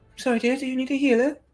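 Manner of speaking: dainty character voice. Narrating a healer character approaching the group, in a dainty character voice. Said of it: "she walks up, sort of daintily, she says".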